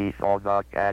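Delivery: flat, monotonous computer-like machine voice. A narrator demonstrates the computer saying a sentence; flat monotone computer voice. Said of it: "monotonous tones of the computer".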